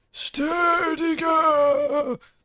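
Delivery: very high put-on grandma voice, "girl" drawn out. Speaker voices a line as Grandma appears, in an old grandma voice. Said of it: "That's the grandma voice".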